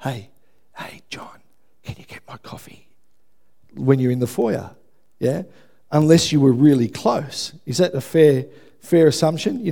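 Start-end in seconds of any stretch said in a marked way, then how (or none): 0.0-2.9 very soft whisper under the breath. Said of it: "I'm not gonna whisper to you".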